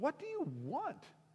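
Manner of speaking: very high, sweeping, incredulous tone.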